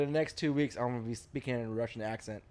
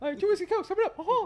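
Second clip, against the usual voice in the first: put-on squeaky cartoon mouse voice, much higher, louder; 3 dB louder than usual. Recalling calling out drinks while bartending, in a Mickey Mouse voice. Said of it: "Is that Mickey Mouse?".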